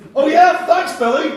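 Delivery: put-on, bright, very high, loud chirpy voice. Retelling a six-year-old's reply to the paper boy: imitating a chirpy reply. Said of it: "I chirruped".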